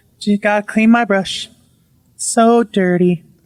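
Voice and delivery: put-on slow nonchalant voice. Retelling a wife's eerie words: imitating someone slow and nonchalant. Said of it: "slowly, like, just, like, nothing's wrong, nonchalant".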